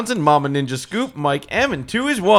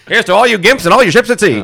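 put-on old-movie mid-Atlantic accent; 4 semitones higher, 7 dB louder than usual. Putting a headset on in a film-sound bit, speak in a mid-Atlantic accent. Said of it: "he's got a mid-Atlantic accent".

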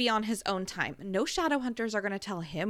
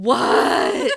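put-on sulky childish tone, louder; 13 dB louder than usual. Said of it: "how my four-year-old sounded".

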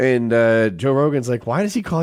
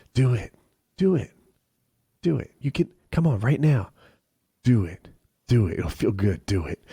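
put-on whisper, quieter; 2 semitones lower, 4 dB quieter than usual.

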